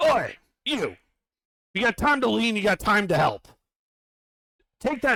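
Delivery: loud, high-pitched yell. One of the Dwerer finally notices the player and calls out, yelling. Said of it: "yells out in common".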